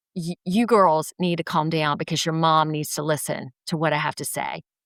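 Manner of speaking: put-on, firm delivery. Retelling the doctor addressing the speaker's two young daughters, imitating a firm warning. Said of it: "the doctor very firmly goes".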